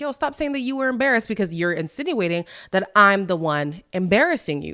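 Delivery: normal talking voice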